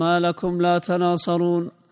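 usual speaking voice

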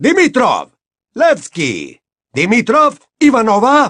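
bellowing. Bagman calls out players' names to a hundred thousand witches and wizards, roaring. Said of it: "Bramó Bagman".

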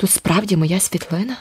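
quiet, soft, hushed voice. Sitting beside the narrator on a park bench, reading the newspaper, he speaks quietly. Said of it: "Тюкі стиха сказав".

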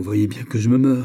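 murmuring in a choked, strangled voice. The duke murmurs to a gentleman in a choked murmur. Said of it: "murmura le duc d'une voix étranglée".

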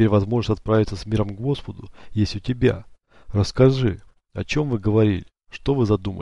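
ordinary delivery

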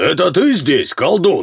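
high, barking shout. In a story, a man challenges the sorcerer he took aboard his ship: barking shout. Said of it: "рявкнул Рерик".

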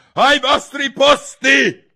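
shrill, very high, very loud, thundering royal bellow. The queen calling everyone to their places for the game, thundering. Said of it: "Tuonò la regina".

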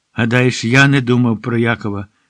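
ordinary delivery

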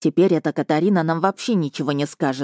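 ordinary delivery

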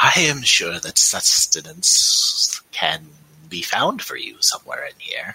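slow, swooping, buzzing voice. Game master voices Kevabiv speaking in the players' minds: buzzing telepathic Kevabiv voice. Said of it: "And Kevabiv says, once again, in your minds, but only in Delilah and Sumi's minds if they allow it, you can hear the buzz of him speaking. ... you can hear the buzz of him speaking".

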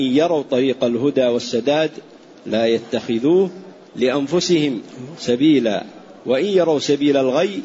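ordinary talk

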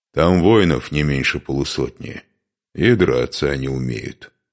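plain

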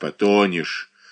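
spoken through clenched, gritted teeth. An old man answers a frightened boy in a boat, through clenched teeth. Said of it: "сквозь зубы ответил старик".

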